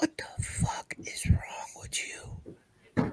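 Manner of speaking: soft, unvoiced ASMR whisper, close to the mic.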